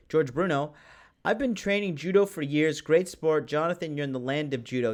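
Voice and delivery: ordinary talk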